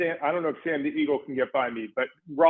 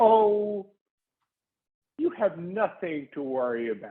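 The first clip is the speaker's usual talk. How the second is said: syrupy, sugar-sweet, sweetest possible tone; 2 semitones higher than usual. Planning the answer when asked about getting in trouble: sweetest voice possible. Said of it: "in the sweetest voice possible".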